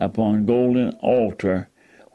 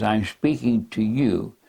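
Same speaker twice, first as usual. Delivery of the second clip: ordinary talk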